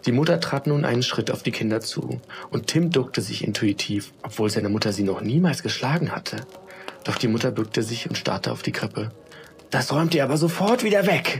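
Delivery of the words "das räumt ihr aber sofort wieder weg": shocked, breathless, high-pitched, frightened. A mother, staring at the children's crib, tells them, breathless with fright. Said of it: "sagte sie dann atemlos".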